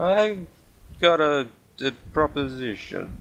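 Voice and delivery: put-on hushed, soft, slow drunken voice. Voicing a character offering a proposition in a game, soft drunken voice. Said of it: "speaking too softly in my drunken voice".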